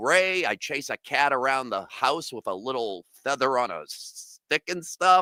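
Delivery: ordinary talk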